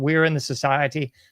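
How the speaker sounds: ordinary talk, nothing marked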